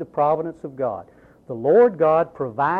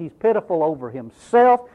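ordinary talk, nothing marked

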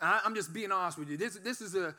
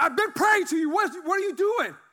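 furious yelling, very loud and high; 11 semitones higher, 8 dB louder than usual. Recounting crying out to god while cussing, the speaker is retelling yelling at god. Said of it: "And I'm yelling and I'm cussing".

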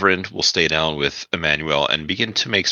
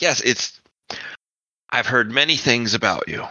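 words forced out through clenched, gritted teeth; 7 semitones higher than usual. Character answering a newcomer's greeting, speaking through gritted teeth. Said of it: "Through gritted teeth".

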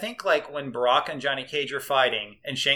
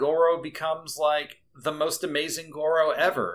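plain

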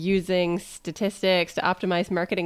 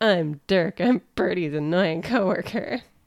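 slow, drawn-out voice with an annoying, tiresome tone. Retelling how a character imitates her coworkers: imitating Dirk. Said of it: "She has a very good impression of her coworkers".

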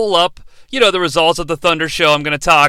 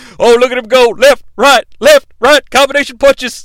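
mock loud, higher play-by-play commentary voice. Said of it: "Stevie Ray's like".

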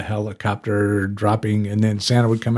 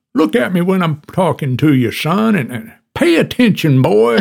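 heavy, laid-on southern drawl, pitched up; 8 semitones higher, 4 dB louder than usual. Describing a dad who was like Foghorn Leghorn, doing Foghorn Leghorn southern drawl. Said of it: "with the southern drawl".

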